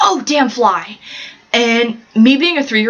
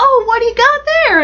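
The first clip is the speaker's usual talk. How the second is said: bad, very high-pitched old-woman voice; 13 semitones higher than usual. Quoting the speaker's mom in a family story she told, horrible old lady voice. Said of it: "That's a horrible old lady voice".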